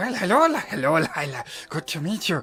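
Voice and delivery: put-on hissing goblin voice. The speaker voices a goblin greeting a newly met character; Gollum-style goblin voice. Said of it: "Lord of the Rings style Gollum kind".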